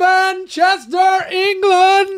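high, fully belted voice in a ring announcer style. Defending the way the place name was said: Bruce Buffer voice. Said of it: "I can't say Manchester, England without going".

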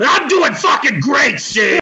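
loud, annoyed, angry voice. In a mock interview skit, answering the host as Felix the Cat, angry Felix the Cat voice. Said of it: "Seem a bit angry there".

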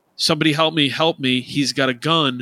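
mock alarmed scream at half strength, mild panicked yell. Retelling how a driver hopped out at the gas pump: imitating someone screaming. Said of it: "is screaming".

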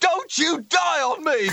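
mock scream, high and slow.

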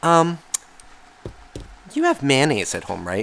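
put-on gentle, sing-song voice. Retelling how she asked in the car: imitating a gentle "I need something" voice. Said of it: "It was my "I need something" voice".

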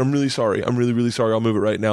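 panicked delivery. Retelling apologizing to an officer threatening jail: imitating own panicked apology. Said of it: "I had such panic".

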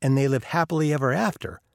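ordinary talk

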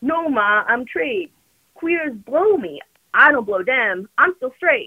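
put-on heaviest possible Baltimore accent, laid on thick. Quoting a movie character answering his Ma, in a very strong Baltimore accent. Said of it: "he says in the most Baltimore accent ever".

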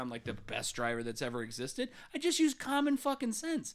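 ordinary talk, nothing marked

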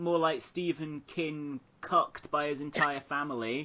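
ordinary delivery

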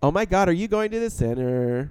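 put-on California Valley Girl delivery. Mimicking a narrator's odd sentence endings: imitating valley girl talk. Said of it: "the whole Valley Girl until that last word".

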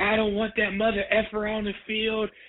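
put-on screaming, very high pitch, shrill. Retelling a game where Rick didn't want him on the field: imitating Rick screaming. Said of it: "And Rick was screaming".

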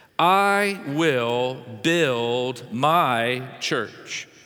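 measured, unhurried, slow and deliberate delivery. Reading a Bible verse aloud to listeners, slow and deliberate. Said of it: "I said it slow on purpose".

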